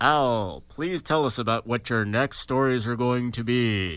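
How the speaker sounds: lofty, theatrical, grand proclaiming voice. Podcast host asks a co-host about his next stories, big booming God voice. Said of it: "I have to do the big booming voice".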